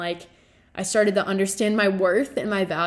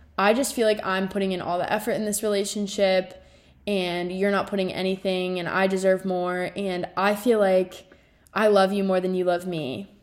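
ordinary talk, nothing marked

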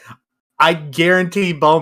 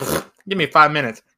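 ordinary talk, nothing marked

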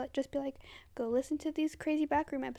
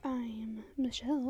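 mock asmr voice, lower and quieter; 3 semitones lower, 4 dB quieter than usual. Copying the other speaker's introduction: imitating an ASMR-like voice. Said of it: "It's like A S M R".

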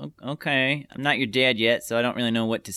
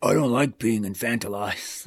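put-on super deep voice. Quoting the tall neighbor Maury from the scene: Maury's super deep voice. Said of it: "super deep voice".

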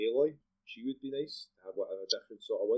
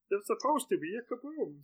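very high cartoon alien voice; 12 semitones higher than usual. Naming cartoon characters with friends, then doing one: Marvin the Martian voice. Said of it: "That's a really good Marvin Martian".

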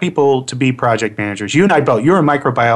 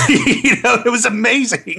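normal talking voice

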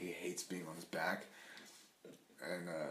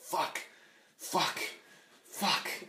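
put-on high, rising toddler voice, cursing. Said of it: "he was like".

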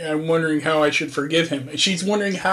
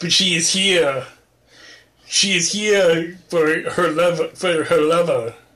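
put-on, played-up German-accented English. Acting out Olga coming over to get her lover back, in Olga's German accent. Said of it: "she's all in her German accent".

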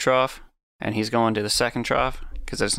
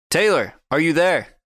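urgent, loud, high-pitched shout; 6 semitones higher, 5 dB louder than usual. A player shouts into a rock to reach taylor, shouting. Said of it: "I shout into it".

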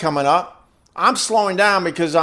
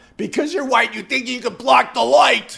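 high, raw, out-of-control screaming rant; 7 semitones higher than usual. Speaker retelling what a man screamed at him, imitating someone screaming. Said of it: "And he's screaming at me".

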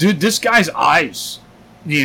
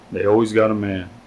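mumbling, much lower and quieter; 6 semitones lower, 4 dB quieter than usual. Retelling what the man in line beside you mumbled to you: retelling a mumble. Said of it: "he kind of mumbles".

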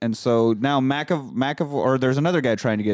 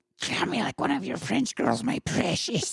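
whispered, all-breath mocking voice; 9 semitones higher, 6 dB quieter than usual. Repeating the movie line back in a Gollum voice. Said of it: "make Kate Winslet sound like fucking Gollum".

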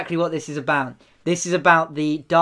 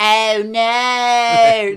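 high, loud cartoonish voice with "no" stretched out; 7 semitones higher, 6 dB louder than usual. Mocking a movie line, imitating a Family Guy character. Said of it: "sounds like the guy in Family Guy who's like".

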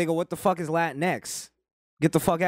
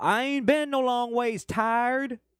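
put-on folksy drawl, pitched up; 8 semitones higher than usual. Mocking a politician faking a folksy voice: Hillary Clinton's put-on folksy voice. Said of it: "Hillary Clinton doing the".

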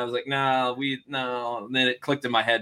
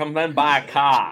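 put-on Boston accent, higher and louder; 3 semitones higher, 7 dB louder than usual.

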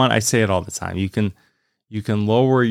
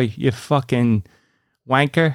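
put-on British accent, higher and slower; 4 semitones higher than usual. Explaining how swearing sounds in the UK, in a put-on British accent. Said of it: "It's the accent. Just be like".

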